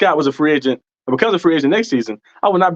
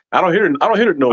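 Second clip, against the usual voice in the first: usual speaking voice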